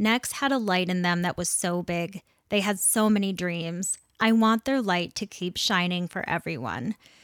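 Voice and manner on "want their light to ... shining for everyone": ordinary talk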